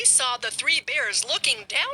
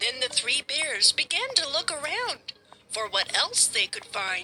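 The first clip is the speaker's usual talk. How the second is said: ordinary delivery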